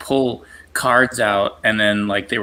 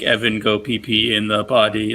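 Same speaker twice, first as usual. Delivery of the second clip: slow, flat, programmed-sounding computer robot voice. Recalling a device his dad programmed to remind him to pee, robotic voice. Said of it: "it would have this like robotic voice".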